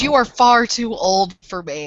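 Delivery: slow, disgruntled, grumbling voice. Voicing a character in a game scene: grumbling. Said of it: "She grumbles and she goes".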